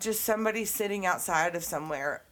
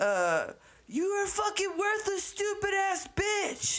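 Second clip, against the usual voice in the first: mock-angry man voice, much higher; 13 semitones higher than usual. Retelling a stranger's outburst at someone asking for directions: imitating an angry man. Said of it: "he was way more mad than that".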